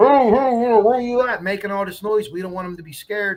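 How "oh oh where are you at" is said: loud villain voice, called out through a mask. A firefighter in a mask and air pack shows kindergarten kids what they would hear, Darth Vader voice. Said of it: "We talk like Darth Vader".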